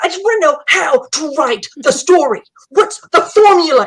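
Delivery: high, loud, shrieking, insistent yell. Retelling a woman at a writing critique demanding a formula: imitating a woman screaming. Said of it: "She's screaming at me".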